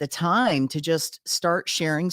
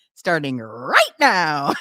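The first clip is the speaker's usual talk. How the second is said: voice cracking and breaking on the last word; 4 dB louder than usual. Repeating the end of the show promo: imitating own voice cracking. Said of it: "I sound like my voice is cracking at the end".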